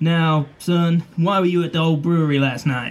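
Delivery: stern lawman-like voice. Game master as Sheriff Blunt questioning the player in an interview room, Sheriff Blunt voice. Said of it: "It's the sheriff. / [name] sits you down".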